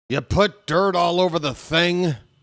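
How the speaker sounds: play-acted, high, top-of-the-lungs, all-out scream. Describing a favorite part of a major league manager clip, imitating Earl screaming. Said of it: "he screams at the top of his lungs".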